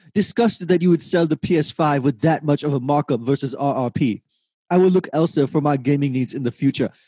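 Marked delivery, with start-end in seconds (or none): none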